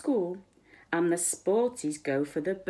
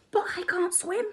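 high little half-whisper, pitched very high; 13 semitones higher than usual. Simon answers Ted's suggestion of a friend, half-whispered. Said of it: "whispered Simon".

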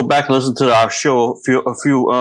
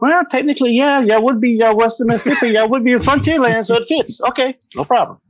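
different voice, pitched very high; 12 semitones higher than usual. Retelling what a friend said about the frontier: Rachel impression. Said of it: "Is that your Rachel impression?".

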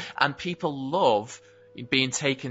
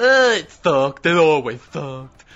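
nerdy voice, louder and slower; 4 semitones higher, 10 dB louder than usual. Imagining how fans react to an Avatar 2 trailer, in a geek voice. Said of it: "that's my geek voice".

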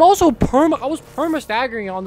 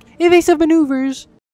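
loud, high, mocking parody of game commentary; 5 semitones higher, 5 dB louder than usual. A gamer quoting the in-game commentary from her, mimicking the in-game commentary. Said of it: "She's like".

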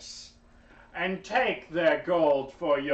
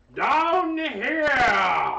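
loud shouting, much higher pitch; 9 semitones higher, 5 dB louder than usual. Role-playing a character calling again to a young dragon, shouting. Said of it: "I shout again".

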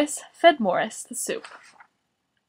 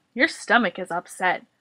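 plain

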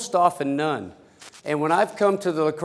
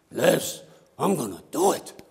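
put-on speaking in a Pennsylvania Dutch accent. Quoting a woman who turned 65 answering Liz, in a Pennsylvania Dutch accent. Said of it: "with her Pennsylvania Dutch accent".

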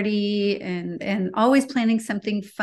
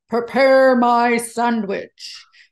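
big, loud, room-filling boom, acted out; 3 semitones higher, 6 dB louder than usual. Retelling how he used to order his sandwich, in a booming voice. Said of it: "he booms into the room and he says".

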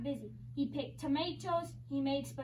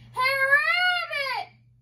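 high, loud yelled words; 11 semitones higher, 13 dB louder than usual. Someone outside the fox's door calls out for rabbit; yelled. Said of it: "Someone yelled outside".

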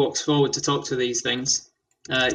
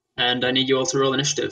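ordinary talk, nothing marked

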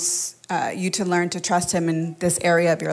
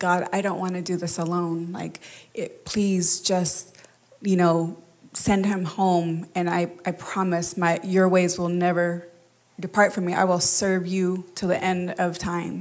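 acted-out crying, tearful, pleading voice. Retelling a prayer to god while crying: retelling a tearful plea. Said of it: "praying and crying, like".

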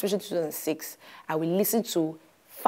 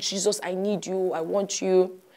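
put-on very slow, tearful, weeping, pleading voice; 3 semitones higher than usual. Retelling late-night prayer calls, retelling own crying prayer. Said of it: "I'll just be crying and just say".

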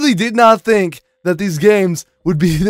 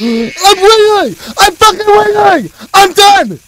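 strained, hoarse, very high frightened screaming; 13 semitones higher, 6 dB louder than usual. Playing a horror game, stuck wiggling out of spring locks, hoarse scared screaming. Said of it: "I'm losing my voice from these fucking puppets".

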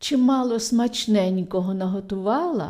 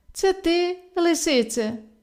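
astonished, surprised, pitched-up goat voice; 7 semitones higher than usual. The goat answers the fox's greeting from the well, surprised. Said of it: "Здивувався цап".

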